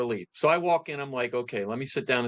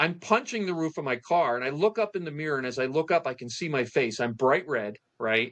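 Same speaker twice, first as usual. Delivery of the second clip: normal talking voice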